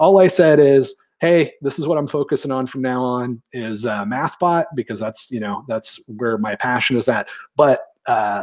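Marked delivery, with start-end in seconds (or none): none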